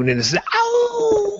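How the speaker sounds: high crying howl.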